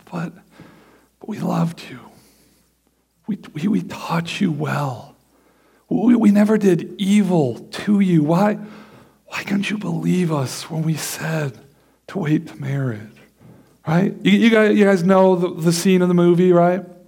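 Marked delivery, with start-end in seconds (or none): 0.1-13.0 put-on grief in a grieving mother's voice. Acting a mother whose teen daughter is pregnant, acting a grieved mother. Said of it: "she's just so grieved".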